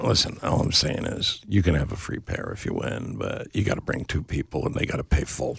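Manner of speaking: low, hushed, menacing mobster voice under the breath.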